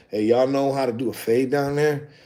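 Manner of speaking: hushed, furtive, secretive voice. Retelling how clients ask the shop about fades: imitating a client saying it quietly. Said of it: "They gotta say it real quiet".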